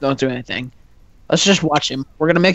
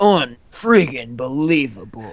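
announcing tone with swooping pitch; 3 semitones lower than usual. During a game session, a player reacts in Halo Reach announcer voice. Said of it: "that's the Halo Reach announcer voice".

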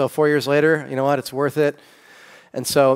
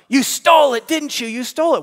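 mock very high, shrill, accusing scream; 12 semitones higher, 3 dB louder than usual. Retelling a story where a mother screams at her daughter: imitating a mother screaming. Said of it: "her mother starts screaming at her".

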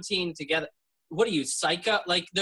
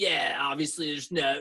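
mock smug, put-on smugness. Recalling being a smug atheist, the speaker acts out their past self; mock-smug atheist. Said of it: "like smug".

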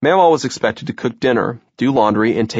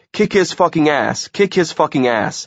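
acted wild scream, high-pitched mild yell; 5 semitones higher than usual. Telling a story of a store brawl, voicing Mom as she throws things, screaming. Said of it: "She's screaming".

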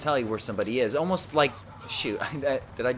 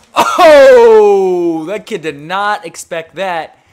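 very loud, high yell with a drawn-out oh; 7 semitones higher, 19 dB louder than usual. Player talking to the listener during a game, yelling. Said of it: "didn't expect me to yell in your ear".

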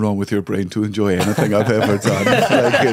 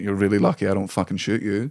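put-on flat, blunt delivery, quieter; 2 semitones lower, 5 dB quieter than usual. Retelling a threat from an armed audience member: imitating a blunt threat. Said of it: "he very straight up went".

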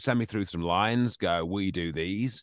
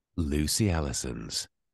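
romantic, much lower pitch; 5 semitones lower than usual. Answering a listener's request to say her name, romantic. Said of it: "say my name in a rather romantic way".

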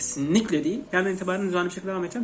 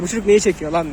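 plain

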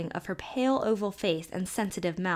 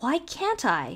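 rather indignant tone; 3 semitones higher than usual. Warned by Ellen that she can't monkey with colds, Emily asks indignantly. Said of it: "Emily asked rather indignantly".

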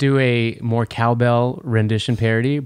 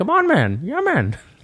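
squeaky, very high voice, drawn out; 11 semitones higher than usual. Imitating a comedian's impression of Joe Rogan: high-pitched Joe Rogan impression. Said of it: "he just talks really high pitched".

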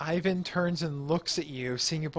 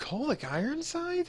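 very high, soft, unsure, puzzled acted tone; 11 semitones higher, 6 dB quieter than usual. In a tabletop scene, a character tries to remember a name he just heard: confused. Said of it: "He looks confused, and he's like".

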